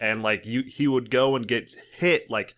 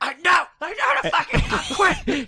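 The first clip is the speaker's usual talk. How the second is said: put-on snapping voice, higher pitch; 4 dB louder than usual. Retelling a friend's reply when told to use his ultimate: imitating Olsen snapping back. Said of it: "And he's like".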